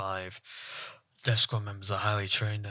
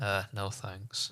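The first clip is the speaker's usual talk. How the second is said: ordinary talk, nothing marked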